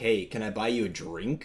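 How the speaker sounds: put-on creepy man voice. Retelling a story, playing the guy approaching a young woman, imitating a creepy guy. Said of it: "the guy's like creepily like".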